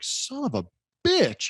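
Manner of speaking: shocked delivery.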